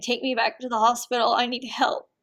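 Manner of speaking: reenacted crying voice. Speaker recounts begging their mom to take them back, retelling a crying plea. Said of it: "crying and saying".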